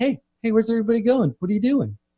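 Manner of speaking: character voice, pitched very high. Voicing a talking limo as players get out: voicing a talking limo. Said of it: "the limo's like".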